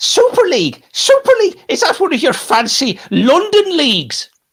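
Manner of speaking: very high, swooping, slow, drawn-out sing-song drawl. Asked for Roy Keane on the Super League, a Roy Keane impression. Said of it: "it's going to be a Roy Keane impression now".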